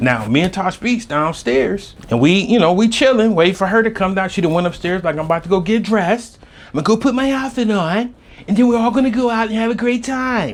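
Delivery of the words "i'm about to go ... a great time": terrible put-on British accent, pitched high. Retelling how a friend went upstairs to get dressed, the speaker quotes her in a bad British accent. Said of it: "I have a terrible British accent".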